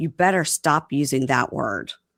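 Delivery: ordinary talk, nothing marked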